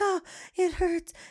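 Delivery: put-on high, loud, whiny crying toddler wail.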